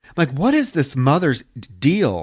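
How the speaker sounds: ordinary delivery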